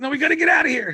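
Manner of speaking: put-on angry voice. Retelling a cartoon scene where the character Rick gets mad: imitating Rick getting mad. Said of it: "Rick gets all mad".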